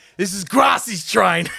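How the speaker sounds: very high, shrill, shouted yell. Retelling a train story, quoting a mate: imitating someone yelling. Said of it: "he yells out, he goes".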